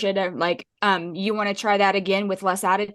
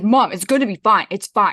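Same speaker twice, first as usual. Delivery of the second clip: loud, dismissive, brushing-off voice; 6 dB louder than usual. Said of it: "that's the that's the voice".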